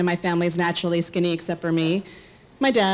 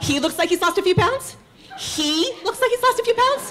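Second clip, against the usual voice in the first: very high, climbing, indignant, outraged snap; 14 semitones higher than usual. Retelling her reaction when a friend says her husband lost weight, acting out snapping. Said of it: "I totally snapped".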